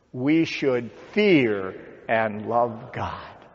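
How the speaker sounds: fear stressed, said slowly. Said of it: "put an emphasis on the third word".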